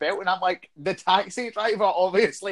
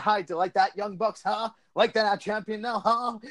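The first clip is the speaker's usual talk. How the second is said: jeering, taunting, mocking tone; 2 semitones higher than usual. Retell a new champion going backstage after winning the title, imitating someone mocking everyone. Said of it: "you're mocking everyone".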